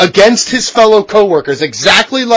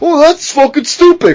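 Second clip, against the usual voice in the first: higher-pitched, casual, sweary voice; 6 semitones higher than usual. Retelling what a wrestler said backstage: imitating CM Punk. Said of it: "'cause that's how fucking C M Punk talks".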